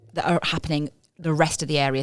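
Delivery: ordinary delivery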